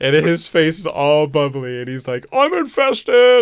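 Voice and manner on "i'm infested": high, loud, slow scream in panic. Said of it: "he's screaming for help".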